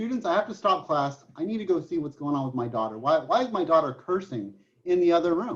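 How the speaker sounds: ordinary delivery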